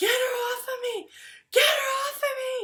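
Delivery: very high, shrill, acted top-of-the-lungs scream. Retelling how a woman across the intersection screamed; retelling a scream. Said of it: "on the other side of the intersection screaming".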